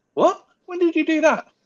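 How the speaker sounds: voice shooting up very high in a loud burst. Reacting to a remark, with voice going high. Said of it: "I don't know why my voice went so high there".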